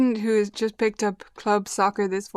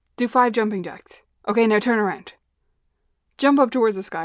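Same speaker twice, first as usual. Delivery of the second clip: sudden, abrupt, theatrical, played for laughs; 4 dB louder than usual. Showing how you'd get listeners moving, give abrupt, funny commands. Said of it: "be kind of abrupt in a funny way".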